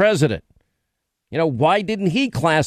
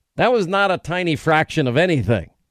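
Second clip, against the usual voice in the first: ordinary talk, nothing marked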